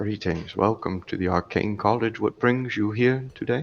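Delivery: hushed, low-spoken, quiet dwarf voice. Game master voicing a dwarf who greets the players: low dwarf voice. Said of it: "he speaks to you in a low voice".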